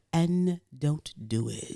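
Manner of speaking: drawn out very slowly in a cheesy way. Mocking how a TV detective talks: Horatio Kane impression. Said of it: "'cause he talks like this".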